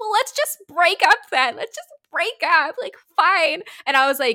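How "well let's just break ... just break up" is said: mock crying through the words, high bawling sob. Retelling a breakup, the speaker mimics the man who started bawling: imitating someone bawling. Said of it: "He starts crying, like, bawling, and he's like".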